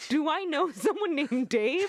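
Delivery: put-on baffled wondering. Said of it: "says it in this way, like".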